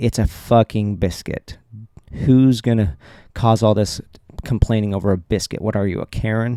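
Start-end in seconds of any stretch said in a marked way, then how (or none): 0.0-1.6 mock-dismissive, eye-rolling tone, slower. Speaker acts out one possible reply to a complaint, mock eye-rolling dismissal. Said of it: "I could eye roll and say".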